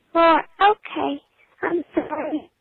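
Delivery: exaggerated childlike baby voice. Playing a decoy on a phone call: exaggerated baby voice. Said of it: "they're usually using an exaggerated baby voice".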